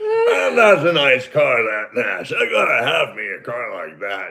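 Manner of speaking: man's voice, as if chomping a cigar. Retelling what a guy at work said about the car: impression of a guy's cigar voice. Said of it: "in my mind, that voice, you need a cigar".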